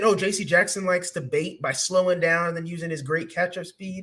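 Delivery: ordinary delivery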